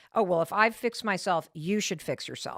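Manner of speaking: plain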